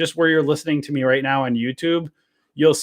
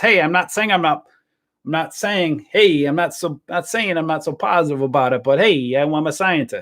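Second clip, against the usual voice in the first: put-on Italian accent in a character voice; 3 semitones higher than usual. Retelling how an Italian guy answers people's questions, in an Italian accent impression. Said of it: "That's my Italian voice".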